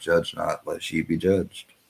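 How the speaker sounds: normal talking voice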